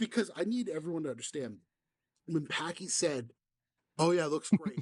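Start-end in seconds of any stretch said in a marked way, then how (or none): 4.0-4.8 mock patronizing, condescending, dismissive, talking down. Retelling how a friend answered about a slide: imitating a condescending tone. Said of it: "he said it in such a condescending way".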